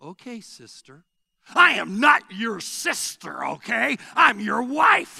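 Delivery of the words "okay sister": very hushed, quiet voice dripping with sarcasm. Retelling a heated argument with his wife: imitating himself, quiet and sarcastic. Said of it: "I'll just quietly but sarcastically".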